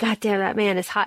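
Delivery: put-on heavy breathing. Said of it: "I was breathing as heavy as Bree".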